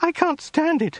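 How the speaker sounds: crying out, very high-pitched. Narrator reads a woman's line to the great Khan, crying out. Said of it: "cried the woman".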